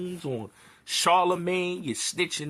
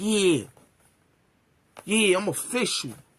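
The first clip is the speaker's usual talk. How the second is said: slow, drawling, mocking tough-guy gangster voice. Mocking a rival's podcast boasts: imitating Tax Stone's gangster talk. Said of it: "that gangster talk".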